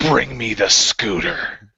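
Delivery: dramatic, slow, drawn-out, grand delivery. Picturing Vince slamming his hands on the desk: dramatic Vince impression. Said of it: "he just looks all dramatic".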